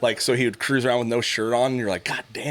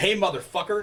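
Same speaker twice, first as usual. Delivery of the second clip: acted, loud, high, pitched-up yell; 8 semitones higher than usual. Speaker recounts yelling at a man walking toward their daughter, retelling a yell. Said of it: "And everyone turned around".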